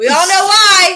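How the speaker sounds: very loud, high-pitched, thrilled, excited screaming. Joking with another speaker on a recording, screaming excitedly. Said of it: "Why are you screaming?".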